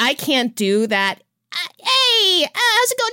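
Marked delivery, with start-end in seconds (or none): 1.5-3.1 put-on New York accent, very high and slow. A speaker tries out a greeting to test an accent, new york accent. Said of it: "New York accent".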